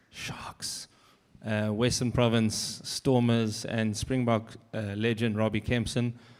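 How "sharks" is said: whispered, very quiet, barely voiced. Introducing the final speaker before the Q and A: whispered Sharks. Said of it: "I want to whisper this".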